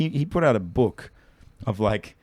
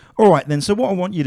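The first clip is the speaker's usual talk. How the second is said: put-on English accent, higher and louder; 8 semitones higher, 8 dB louder than usual. Mocking magicians who copy mannerisms, imitating an English accent. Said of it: "they just become English".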